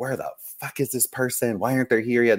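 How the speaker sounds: put-on exasperated, frustrated, annoyed outburst. Retelling the photographer's complaint while waiting on the stylist, mock-frustrated. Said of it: "He's all frustrated".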